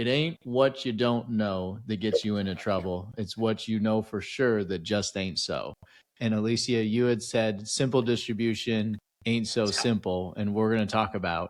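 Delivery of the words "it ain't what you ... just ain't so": plain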